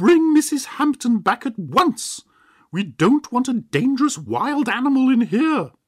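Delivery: shrill, very high-pitched, loud shrieking scream. Seeing a wolf appear, an aunt turns on her nephew: screaming. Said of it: "she screamed".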